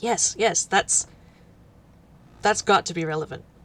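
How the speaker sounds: keenly excited, eager, keen voice in character. Playing a character who leans forward: eager character line. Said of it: "leans forward, uh, like, eagerly".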